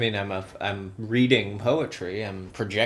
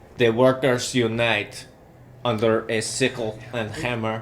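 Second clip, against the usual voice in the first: put-on Russian-sounding accent; 4 dB louder than usual. Reading the next line of the poem: Russian-sounding accent. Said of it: "a very Russian type of".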